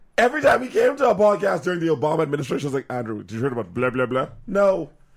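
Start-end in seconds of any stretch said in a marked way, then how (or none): 2.9-4.3 casual, closely imitated put-on voice. Retelling how the other speaker asked about politics: imitating a friend. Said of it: "that's a dead-on impression of me".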